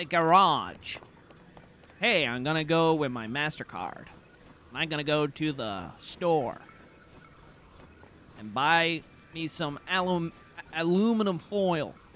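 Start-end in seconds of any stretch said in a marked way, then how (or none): 2.0-11.9 put-on American accent. Asked during a donation shout-out to do an American accent, put-on American accent. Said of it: "That is my American impression".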